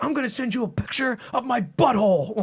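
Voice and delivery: very high, raging rant. Retelling what a player said in the game lobby: imitating a raging gamer. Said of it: "this guy was raging in the lobby after".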